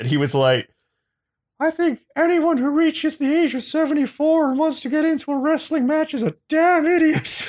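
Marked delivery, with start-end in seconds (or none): 1.6-7.5 very high-pitched character voice, raised to the top. Retelling an interview answer about wrestling at seventy-four: Terry Funk impression. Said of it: "[name]'s Terry Funk impression".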